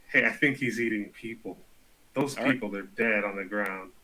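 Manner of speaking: half-whisper close to the ear, in character. Half-whispering a warning to a fellow player's character: half-whispering in character. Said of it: "I'm gonna whisper it to".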